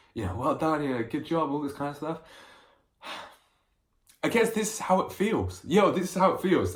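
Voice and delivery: tearful, crying, breaking down through the words. Recording a video diary about a brother's congratulations, breaking down in tears. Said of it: "I'm I'm breaking down in a video".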